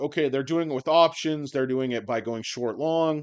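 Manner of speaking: ordinary talk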